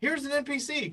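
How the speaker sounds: high, gushing game master voice. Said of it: "I hate it when players are like".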